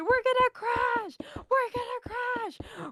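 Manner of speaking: put-on screaming, very high-pitched. Retelling a car ride with friends, acting out their scream. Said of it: "we kept screaming".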